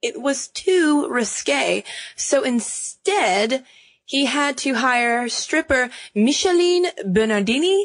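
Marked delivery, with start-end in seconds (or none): 4.0-7.9 terrible put-on French accent, pitched up. Speaker telling how Reard found a model for his bikini, terrible French accent. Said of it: "That's my terrible French accent".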